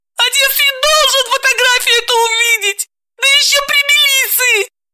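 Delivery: abrupt, shrill cry, very high. Veta, talking with Dalila, suddenly shouts. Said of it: "вдруг закричала".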